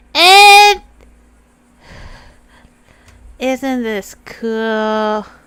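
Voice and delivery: booming, slow, cool delivery, words stretched out. Showing everybody what Goosey's voice sounds like: Goosey's voice. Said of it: "when I do Goosey's voice, I go".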